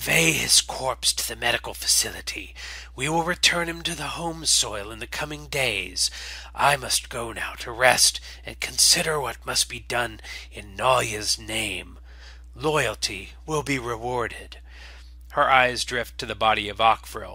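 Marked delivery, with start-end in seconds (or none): 0.0-14.6 hissed, commanding delivery throughout. The exile leader addresses her followers over a fallen warrior, in a hissing voice. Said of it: "From the cargo bay emerges the exile vox, [name] of Hatch Cathar, followed by an entourage of Cathar loyalist Nall. They all look fairly lean and ragged from months within the superstructure of the colony vessel. The exile vox is ... hissing softly, and then speaks. "[name], shine on you, glorious c".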